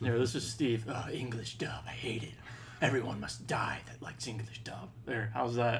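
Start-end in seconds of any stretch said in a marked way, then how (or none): 0.9-4.9 breathy, hushed, whispered anime character voice. Chatting in a group, one speaker tries out a Bleach anime character voice. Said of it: "You sound like a Bleach character".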